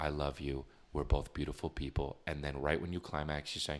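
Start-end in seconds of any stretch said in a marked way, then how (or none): 0.0-2.2 soft whisper, much lower and quieter. Acting out whispering in a girl's ear, in a soft whisper. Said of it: "I'm whispering in your ear".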